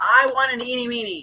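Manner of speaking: acted high, pleading shout. Retelling yelling at the tv during a scene: imitating own past yelling. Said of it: "I'm literally yelling at the T V".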